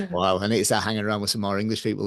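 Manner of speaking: ordinary talk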